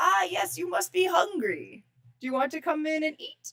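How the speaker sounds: put-on kindly elderly man voice. Voicing a kindly old man offering a player food: voicing a kindly old man. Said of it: "the nice, kindly man who's making dinner looks over and goes".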